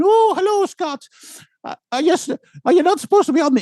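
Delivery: clumsy, very high-pitched, shrill put-on voice. Retelling a breakfast greeting to a presenter: terrible Mark Story impression. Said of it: "that was a terrible impression".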